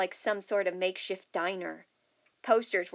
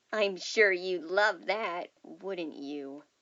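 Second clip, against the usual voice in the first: deep, slow, mocking, taunting menace. Reading a story aloud, voicing the animatronic answering Millie: deeper mocking, borderline threatening voice. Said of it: "His voice was deeper, still mocking but now borderline threatening".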